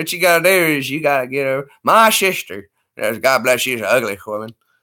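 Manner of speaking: put-on rural Southern accent. Imitate a guy who stood on his balcony watching you get sick, close to Larry the Cable Guy. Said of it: "I don't know if that's Larry the Cable Guy".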